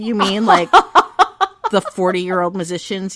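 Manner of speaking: loud, laughing delivery. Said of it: "I'm like".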